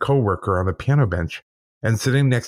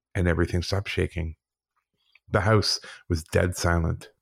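ordinary talk

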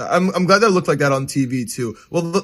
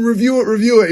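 put-on high-pitched screaming; 7 semitones higher, 5 dB louder than usual. Retelling yelling at a play that could not be reviewed: imitating own screaming. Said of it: "I'm screaming".

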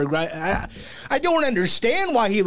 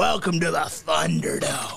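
rough, creaky, growling put-on voice; 4 semitones lower, 4 dB quieter than usual. Weekly impression during the no-fans Thunderdome era, Vince impression. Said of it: "There's my weekly Vince impression".

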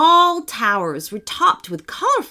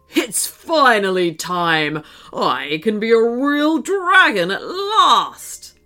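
slow, sinister, menacing evil dragon voice, savouring words. Narrator reading a story, voicing the chocolate dragon: menacing evil dragon voice. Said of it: "was the evil chocolate dragon. / beamed the dragon, / said the dragon menacingly".

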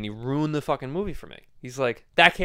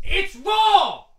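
mock very high, shrill screaming rant; 3 dB louder than usual. For comical effect in front of Grandma, the speaker does a screaming Gordon Ramsay impression. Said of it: "Will you stop screaming?".

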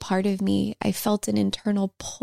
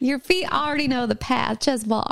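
imitated East Tennessee Southern accent; 4 semitones higher than usual. Asked to repeat Jesse's parting words in his accent, do Jesse's Tennessee accent. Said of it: "Can you say it in Jesse's accent?".

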